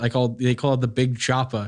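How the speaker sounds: ordinary delivery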